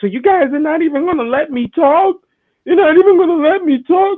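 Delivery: very high, cracking, breaking voice, close to tears. Retelling how a booed performer pleaded with the crowd: imitating Charlotte's cracking voice. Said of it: "her voice was cracking".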